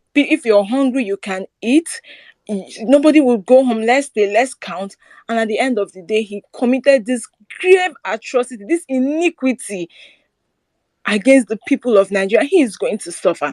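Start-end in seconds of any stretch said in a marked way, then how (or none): 5.2-13.5 emotional, accusing, condemning voice. Speaking about an election wrong done to the people, getting emotional. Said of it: "I'm getting a bit emotional".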